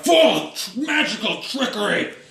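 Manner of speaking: shouting in character. Voicing a fighter who accuses others of trickery: yelling as a character. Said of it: "he yells out".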